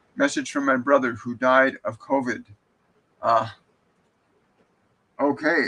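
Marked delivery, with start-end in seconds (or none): none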